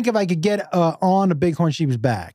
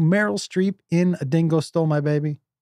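usual speaking voice

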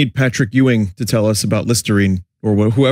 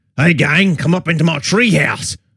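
put-on Australian-accented clown voice; 6 semitones higher than usual. Speaker recalls the different McDonald's mascot voices over the years: Australian Ronald McDonald voice. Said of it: "there's like Australian Ronald".

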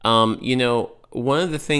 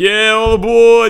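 put-on very high, loud Boston or New York accent; 12 semitones higher, 10 dB louder than usual. Imitating one guy's out-of-place accent: Boston or New York accent. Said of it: "stepped out of Boston or New York".

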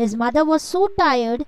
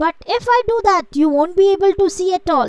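high, distressed cry of dismay; 6 semitones higher, 4 dB louder than usual. Narrator reading the swallow answering the prince's request, cried out. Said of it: "cried the swallow".

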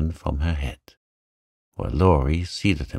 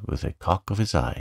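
ordinary delivery

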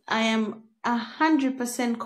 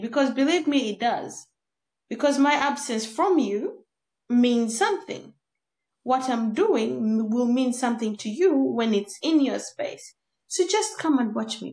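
usual speaking voice

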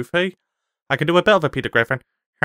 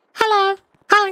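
put-on childlike voice, very high. A speaker greets another person in a put-on kid voice. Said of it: "Why do you sound like a kid?".

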